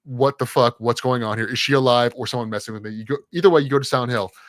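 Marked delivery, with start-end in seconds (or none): none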